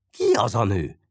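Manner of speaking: usual speaking voice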